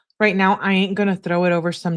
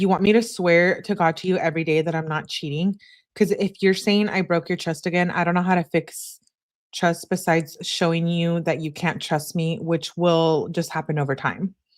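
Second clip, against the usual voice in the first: normal talking voice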